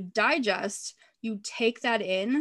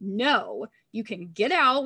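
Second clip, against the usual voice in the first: mock stern, very slow, drawn-out and firm. Retelling a moment of telling the enemy off: imitating her own yelling. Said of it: "I was literally yelling at him in my car".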